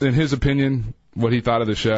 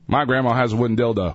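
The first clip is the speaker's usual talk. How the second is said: ordinary delivery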